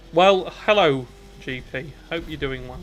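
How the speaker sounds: sarcastic-sounding delivery. Speaker greets G P after messaging him, in a sarcastic-sounding greeting. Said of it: "That sounded sarcastic".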